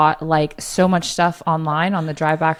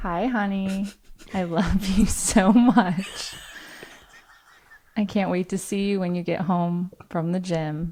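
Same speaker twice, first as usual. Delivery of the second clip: fake flirty voice, very slowly drawn out; 2 semitones higher, 5 dB quieter than usual. Recording a voice message for someone coming home from the gym: put-on flirty voice. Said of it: "I tried to make it sound flirty".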